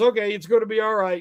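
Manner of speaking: ordinary delivery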